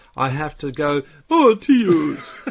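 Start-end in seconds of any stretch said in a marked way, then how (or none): 1.4-2.6 very high, very loud, shrill cartoony voice. Showing how Neil's Catalan dubbing sounds to make people laugh: cartoony Catalan-dubbed Neil voice. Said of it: "I have to talk in this completely different cartoony voice".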